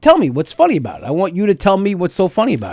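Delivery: high, swooping, pushy, needling, confrontational tone. Retelling his reply to audience members, in a Pesci impression.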